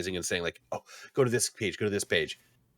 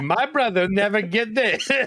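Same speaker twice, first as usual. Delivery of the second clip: put-on Eastern European accent; 13 semitones higher, 6 dB louder than usual. Describing how a brother tells the joke, the speaker mimics it: Borat accent. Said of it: "He just makes it like Borat".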